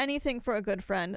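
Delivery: normal talking voice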